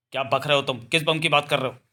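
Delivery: ordinary delivery, nothing marked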